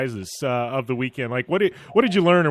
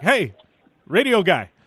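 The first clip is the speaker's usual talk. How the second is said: put-on relaxed Polish accent, raised pitch; 5 semitones higher, 4 dB louder than usual. Walking through the paddock, quoting Peter calling out to him, in Peter's Polish accent. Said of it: "he's saying it in his, you know, his Polish accent".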